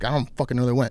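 normal talking voice

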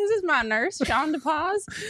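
put-on American Southern accent. Introducing another person as their nurse, in a Southern accent. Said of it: "why'd you turn Southern all of a sudden?".

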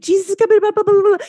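acted, very high, screamed at top speed. Retelling a moment of terror: imitating screaming a prayer fast. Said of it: "I am screaming out the, you know, the sinner's prayer as fast as I can".

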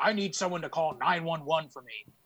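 play-acted petty, entitled, complaining, demanding tone. Retelling what an old man at a store said, imitating an entitled complaining tone. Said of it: "in that tone".

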